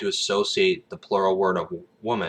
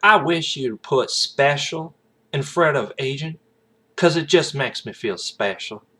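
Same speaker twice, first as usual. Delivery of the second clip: put-on, sassy, high-pitched Southern accent; 7 semitones higher than usual. Retelling a Boondock Saints scene, quoting a woman's reply to an agent, in a Southern accent impersonation. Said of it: "a Southern accent impersonation".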